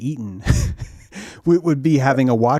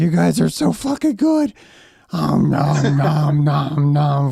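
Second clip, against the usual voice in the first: put-on screaming snake voice, higher pitch; 4 semitones higher, 4 dB louder than usual. Acting out the time snake eating people: Quetzalcoatl screaming. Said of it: "I am picture him screaming".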